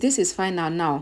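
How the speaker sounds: usual speaking voice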